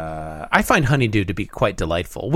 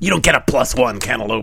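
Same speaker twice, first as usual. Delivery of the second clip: fun, playful put-on character voice. Quoting a bit from a show they had talked about, in a fun put-on voice. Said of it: "that was a fun voice".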